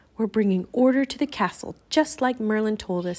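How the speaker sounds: ordinary delivery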